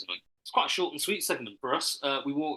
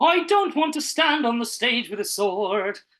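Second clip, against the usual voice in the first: fake Irish accent, higher and louder; 10 semitones higher, 9 dB louder than usual. Showing casting directors an accent from a play: put-on Irish accent. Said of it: "How about your Irish again?".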